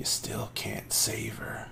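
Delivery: wispy, thin, airy, breathy whispered voice. Narrating a scene, voicing something that sounds like the baker, thin, breathy voice. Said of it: "out of it comes a thin, breathy voice".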